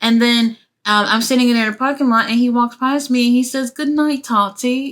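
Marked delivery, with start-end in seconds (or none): 3.7-4.9 put-on British accent, put on. Retelling what someone said while walking past in a parking lot: imitating a British accent. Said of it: "the British accent".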